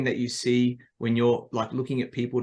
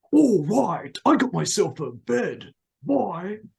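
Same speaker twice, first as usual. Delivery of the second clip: loud, belted, swooping, sing-song cartoon crook voice; 8 semitones higher, 5 dB louder than usual. Recalling a favorite line from watching The Simpsons, doing a Snake from The Simpsons impression. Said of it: "Snake, the guy that, you know, steals everything... He's like".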